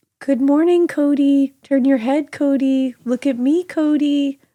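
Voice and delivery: put-on creepy, high-pitched little-kid voice. Retelling a creature that talked to the reader: imitating a creepy childlike voice. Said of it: "in a childlike voice that sounded just like my daughter".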